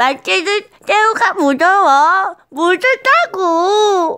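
very high, loud, slow, drawn-out squeaky put-on voice. Trying the impression again properly while a friend watches; doing a voice impression. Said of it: "저의 이 성대모사를 보면서".

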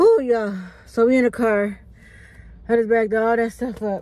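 winded, out of breath. Vlogger back in the car after shopping, out of breath. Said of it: "I am out of breath and I'm tired".

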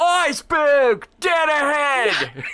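high, loud, slow shout from the background.

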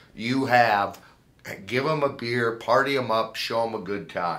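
ordinary delivery

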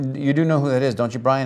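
hushed stage whisper under the breath. Retelling a question asked under the breath to Brian: retelling own stage whisper. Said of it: "stage whisper".

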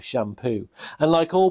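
ordinary delivery

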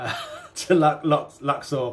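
words broken up by laughter mid-sentence. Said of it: "See, I'm laughing now".

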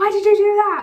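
high, loud scream.

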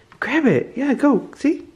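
put-on high, sing-song, cooing baby talk.

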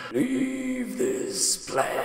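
very high, commanding shouted yell. Voicing a skeletal monk warning an intruder away: skeletal monk shouting. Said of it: "it reaches its arm out and it shouts".

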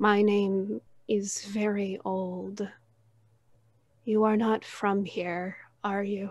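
gentle, soothing, calming tone. A game master voices an ancient giant turtle speaking in the party's minds, soothing voice. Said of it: "in this soothing voice".

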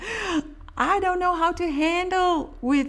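high-pitched mock horse shout. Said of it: "he's just shouting, like".

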